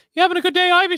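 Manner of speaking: very high loud cartoon voice. Showing the voice kept from a daughter: Mickey Mouse voice. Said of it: "I can't even do, like, the voice".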